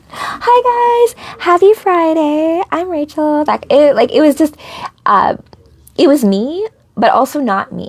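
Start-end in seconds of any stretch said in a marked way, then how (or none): 0.2-3.5 annoying put-on corporate phone voice, high and drawn out. Recalling how she used to answer calls, in her high-pitched corporate voice. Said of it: "my corporate voice was like high pitched and kind of annoying".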